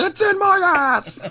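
very high, shrieked, screaming wail. Speaker acts out the other person's outburst twenty minutes later, mock screaming. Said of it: "you're just sweating and screaming".

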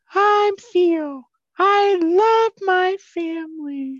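very high, loud, slow, very drawn-out falsetto. Retelling someone pretending to be her brother, in a high falsetto as Theo. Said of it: "high-pitched falsetto character actor voice".

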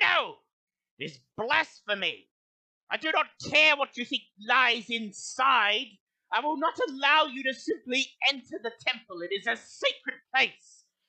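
put-on high-pitched elderly woman shouting. Game narrator voicing an older woman heard in a din of voices, high-pitched old woman shouting. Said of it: "a high-pitched, older female's voice shouting".

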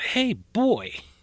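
very high, shrill marine yell. Retelling a man yelling at a kid who won't flinch, retelling a scream twice as loud. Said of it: "So he screams twice as loud".

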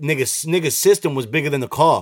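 ordinary talk

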